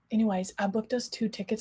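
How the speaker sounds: hushed whisper. Telling her chat about plans with her mom, whispering. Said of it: "I'm whispering as if she can hear me".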